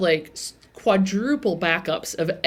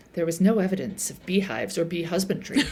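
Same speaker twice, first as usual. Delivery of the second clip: put-on sultry voice, quieter; 5 dB quieter than usual. Retelling a show scene, quoting Marita's line in an imitated sultry voice. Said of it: "almost, like, sultry".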